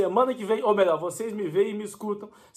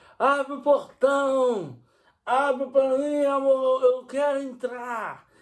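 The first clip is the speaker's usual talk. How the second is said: mock shouting, much higher and slower; 5 semitones higher than usual. Retelling a man shouting at night for his wife to open the gate, retelling his shouting. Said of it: "E ele gritando".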